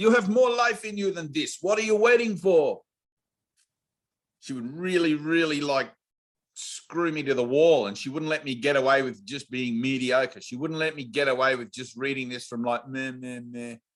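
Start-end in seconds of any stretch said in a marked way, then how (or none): 0.0-2.8 very high, poorly put-on Dutch accent. Recalling a Dutch woman pushing the speaker face to face, in a bad Dutch accent. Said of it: "I don't do a good Dutch accent".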